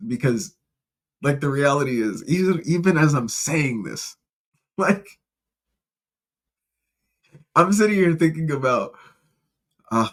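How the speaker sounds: talking through laughter. Explaining what the speaker is thinking about: laughing while talking. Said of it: "so I'm laughing".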